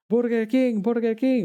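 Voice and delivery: put-on very obvious, heavy Spanish accent, pitched way up. Speaker retells men at a food truck heckling a guy, obvious spanish accent. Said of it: "with very obvious Spanish accents".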